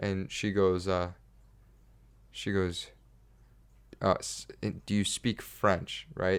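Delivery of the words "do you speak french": French speaker's very broken English. Retelling how a woman on a ladder asked him a question: imitating very broken English. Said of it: "very broken English".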